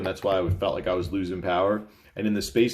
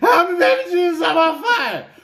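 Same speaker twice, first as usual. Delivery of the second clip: put-on panicked yelling, higher and louder; 8 dB louder than usual. Joking about a roadside fire as a Ricky Bobby moment: Ricky Bobby "I'm on fire" moment. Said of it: "Ricky Bobby moment".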